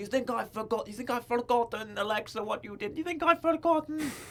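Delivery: put-on young woman's Scottish accent. Acting out what Nikki says to Alexa over the handcuffs, in a Scottish Nikki voice. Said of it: "that's my Scottish Nikki voice".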